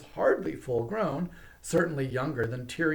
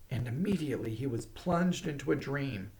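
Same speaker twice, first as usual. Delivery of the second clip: ordinary delivery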